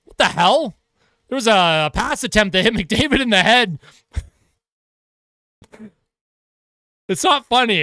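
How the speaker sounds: words broken up by laughing. Hockey commentator describing an attempted hit on mcdavid: laughing while talking. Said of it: "I don't know why I'm laughing".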